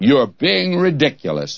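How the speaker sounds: haughty, scornful, disdainful put-on British accent. Retelling what a man said to them: mock-disdainful British voice. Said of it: "he said it in that British disdainful voice".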